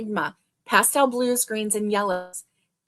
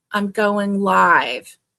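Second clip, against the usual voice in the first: very grumpy, loud, drawn-out delivery; 5 dB louder than usual. Telling how you answered your husband asking what you were doing; retelling a grumpy tone. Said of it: "I said in a very grumpy tone".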